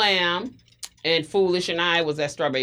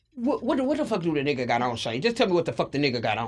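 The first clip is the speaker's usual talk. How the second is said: put-on rapid-fire fast talking. Retelling a man demanding what the other man had on, imitating fast talking. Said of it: "He's talking really fast".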